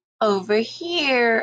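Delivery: high, creaky put-on old woman voice, drawn out. Narrating the wolf calling to Little Red from the bed, high creaky voice. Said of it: "making his voice high and creaky".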